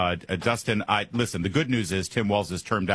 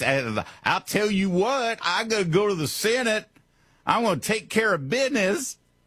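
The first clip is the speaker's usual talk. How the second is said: very high, exaggerated put-on Alabama Southern drawl; 12 semitones higher than usual. Radio host mocks a Maine Senate candidate, mimicking an Alabama accent. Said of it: "why does he talk like he's from Alabama".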